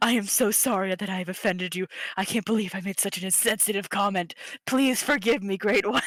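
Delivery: playfully grovelling, jokey pleading tone. Voicing Brooke, who jokingly kneels to apologize: jokingly apologetic. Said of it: "jokingly gets down on her knees, like".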